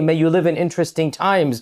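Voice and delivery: ordinary talk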